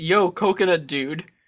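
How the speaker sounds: ordinary talk, nothing marked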